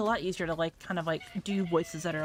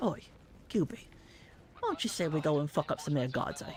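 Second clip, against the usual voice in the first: animated tough-guy voice with swooping, swinging pitch; 2 semitones lower than usual. Showing off an impression to an impressed listener: Butcher impression. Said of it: "surprisingly decent Butcher impression".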